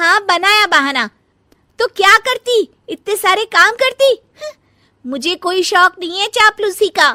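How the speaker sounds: shrill, very high, loud, defiant tone. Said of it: "[name] कपड़े लेकर गमला साफ कर रही होती है और चक्कर आने का नाटक करने लगती है। / [name] कपड़े लेकर गमला साफ कर रही होती है और चक्कर आने का नाटक करने लगती है।".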